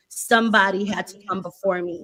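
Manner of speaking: usual speaking voice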